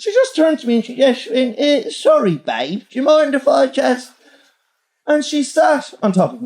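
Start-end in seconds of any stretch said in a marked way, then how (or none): 1.9-4.1 boozy Essex woman's voice.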